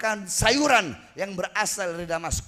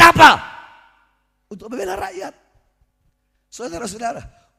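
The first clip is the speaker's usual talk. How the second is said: very loud, full-force preacher's shout; 3 semitones higher, 9 dB louder than usual. A speaker addressing his listeners as brothers and sisters, shouting.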